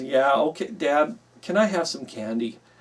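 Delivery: acted sheepish, pleading tone. A father retells his son asking him for candy, imitating a sheepish request. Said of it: "he kind of sheepishly says".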